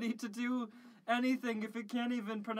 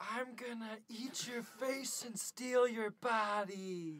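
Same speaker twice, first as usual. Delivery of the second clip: hushed half-whisper, drawn out; 4 dB quieter than usual. Half-whispering a threat into a character's ear: acted half-whisper. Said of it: "And I whisper into his, his ear".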